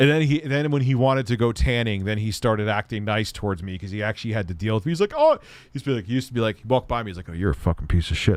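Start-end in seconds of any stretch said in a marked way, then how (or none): 7.3-8.4 put-on muttering under breath, lower pitch. Retelling insults a man muttered under his breath walking past: imitating muttering under breath. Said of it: "say shit like that under his breath".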